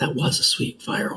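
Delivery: speaking in a whisper. Leaning over to another player in character: whispering. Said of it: "I'm just gonna whisper over".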